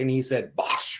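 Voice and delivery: ordinary talk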